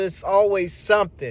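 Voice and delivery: ordinary talk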